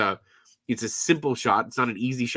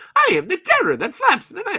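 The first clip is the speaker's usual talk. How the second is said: very high, loud, belted, swooping cartoon voice; 7 dB louder than usual. Quoting a cartoon hero's catchphrase as a joke: Darkwing Duck voice. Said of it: "Oh, that's Darkwing Duck".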